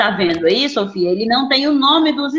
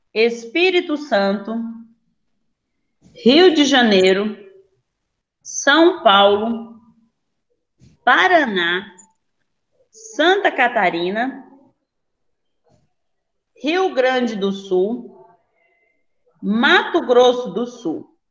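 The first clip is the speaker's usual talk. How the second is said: slow, deliberate, unhurried, one name at a time. Repeating a list of states more slowly so a student can check it, slow, deliberate pace. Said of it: "mais devagar".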